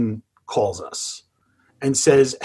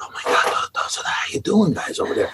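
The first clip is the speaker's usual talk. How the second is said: put-on excited, hushed, childlike whisper; 5 semitones higher than usual. Retelling how the team whispered among themselves: imitating excited whispering. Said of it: "they started whispering, like they were little kids whispering".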